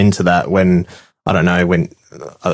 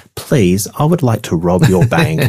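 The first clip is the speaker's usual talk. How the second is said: mock soft, gentle tone, higher pitch; 4 semitones higher than usual. Acting out a polite bank robber: put-on soft, gentle voice. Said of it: "a soft, gentle person going".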